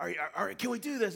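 acted pumped-up rallying voice. Retelling how he revved up the team, acting out a rallying pep talk. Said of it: "he's revving them up".

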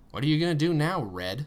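patronizing, talking-down voice. A woman floating by asks someone a question, in a condescending tone. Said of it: "Nega Maddie asked in a condescending tone".

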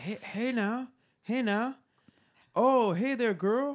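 put-on breathless voice. Showing how Tyler C comes up to a person, an out-of-breath Tyler C impression. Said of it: "he's always out of breath".

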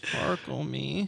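creaky, rough, low-key voice. Doing an impression of Kristen Stewart: Kristen Stewart impression. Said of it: "here's my impression of Kristen Stewart".

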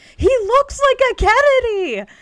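shrill, very high, very loud repeated shout. Retelling how a friend kept shouting after a movie: imitating Katie shouting. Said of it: "just kept shouting at me".

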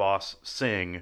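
ordinary delivery

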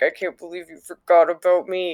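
mock sulky pouting with a sigh. Voicing a displeased sigil that was forgotten, imitating a pouting sigil.

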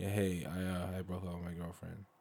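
plain

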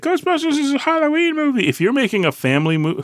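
odd, weird, very high-pitched put-on voice. Mid-conversation, a speaker slips into a weird voice. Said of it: "that was a weird voice".

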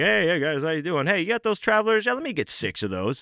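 breezy, chatty, sing-song salesman voice. Retelling an early customer ordering coffee: imitating a chatty early-morning salesman customer. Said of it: "and he's like".

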